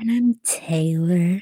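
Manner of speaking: very slow, dragged way out. Told to drag out the introduction, the speaker says it really slowly. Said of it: "say it really slow".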